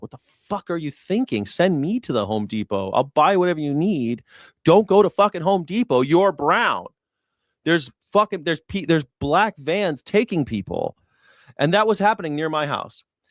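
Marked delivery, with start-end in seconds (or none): 0.0-11.0 mock enraged, furious yelling outburst. Retelling what he told his people after they went to Home Depot: imitating his own angry yelling. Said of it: "I was fucking pissed".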